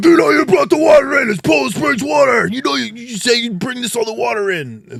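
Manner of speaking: full-blast, very loud shouting, pitched very high. Retelling a podcast argument about water, imitating people yelling at each other. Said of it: "dead yelling at each other".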